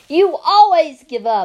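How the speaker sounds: very loud, shrill, high-pitched shouting. Opal answers the preacher, who says it is time to give up, shouting. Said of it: "I shouted".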